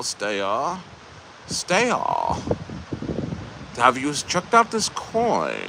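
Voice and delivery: put-on soft, sing-song German accent, "coin" drawn out. Imitating his right-hand man, who has a real german accent. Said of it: "He has a real German accent".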